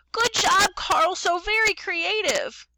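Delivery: very high, squeaky little voice, slow. Retelling how Mrs. Hyatt clapped and praised Carl, in her little squeaky voice. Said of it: "in her little squeaky voice".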